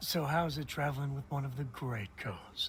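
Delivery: heavily sarcastic, mocking tone. Retrying a remark to a companion after being told to use sarcasm, sarcastic. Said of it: "that time you actually put some sarcasm in your voice".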